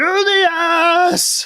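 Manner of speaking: shouting from far away. A character runs off and calls back as he disappears, distant shout. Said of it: "you just hear as he kind of disappears".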